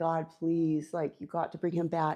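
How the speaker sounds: mock tearful voice. Retelling praying for Oki to come back, imitating crying and praying. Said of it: "I'm just like crying and praying".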